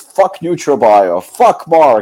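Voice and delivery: slow, ranting, cursing outburst with screaming. Retelling what a man suddenly started yelling, imitating someone screaming like crazy. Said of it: "he started screaming like crazy".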